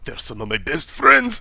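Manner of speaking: through gritted teeth. Game master voicing a character reassuring a player, through gritted teeth. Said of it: "he's saying through gritted teeth".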